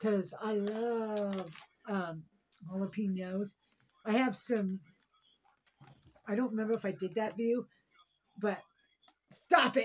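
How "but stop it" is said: sudden, loud, raised yell. Mid food review, the speaker yells at their dog to stop: yelling. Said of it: "Sorry, guys, I'm yelling".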